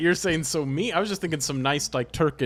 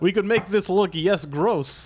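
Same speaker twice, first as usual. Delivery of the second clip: high, attempted, put-on Turkish accent; 5 semitones higher, 3 dB louder than usual. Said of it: "I don't know the accent, but I'll try".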